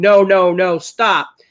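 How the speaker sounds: very slow, high, dragged-out scream. Retelling yelling at a pepper-eating contestant to stop: retelling a scream. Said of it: "I started screaming".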